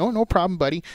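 Wisconsin accent. Replying to another speaker's thanks: Wisconsin-ish accent. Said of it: "Why f- did you guys do Wisconsin-ish accent?".

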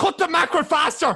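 high, loud roaring yell in thick Dublin accent.

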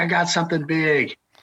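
high, shouted, hollered call. Retelling what he hollered from fifteen to twenty feet away, retelling a holler. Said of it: "I hear him hollering".

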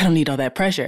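ordinary talk

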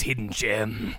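hollywood movie trailer announcer voice. Joking about a phrase, saying hidden gem in Hollywood trailer voice. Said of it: "with the Hollywood trailer voice".

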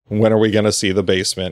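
usual speaking voice

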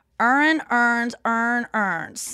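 local Baltimore accent. Showing how people from Baltimore say the words: Baltimore accent. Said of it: "if you're from Baltimore, you go".

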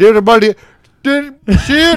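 imitated thick Irish accent. Retelling how a mate's dad yelled a wrong name: imitating a thick irish accent. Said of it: "he's Irish too, so it's, like, thick Irish".

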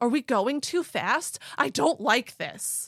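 high, loud, panicky yelling with words drawn out. Retelling a story, quoting a person in a speeding car: imitating panicked yelling. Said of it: "he's panicking and he's yelling".

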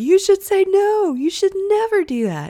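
high, loud, insistent, emphatic group chorus. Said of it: "everyone in the group was like".

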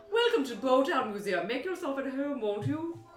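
refined-sounding voice. Speaker tries out a museum character's voice, in Brewster voice. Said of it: "I don't know if this is the voice".

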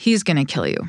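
imitated deadpan delivery. Telling a story about a customer, the speaker repeats a man's words, retelling a deadpan warning. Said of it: "deadpan look me in the eye".

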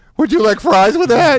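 very high, squeaky put-on cartoon voice. Describing a guy who sounds like a cartoon character, then imitating him: Simpsons fast-food worker voice. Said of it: "He sounds just like the McDonald's worker on The Simpsons".

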